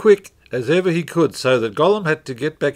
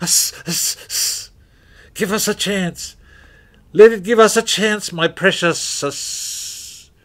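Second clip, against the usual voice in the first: spluttering, hissed whisper, pitched up high; 6 semitones higher than usual. Reading the riddle scene, Gollum answers Bilbo, whispering, spluttering Gollum voice. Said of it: "He whispered and spluttered".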